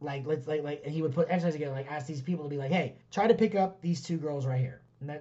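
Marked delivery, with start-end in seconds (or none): none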